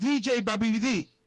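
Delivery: plain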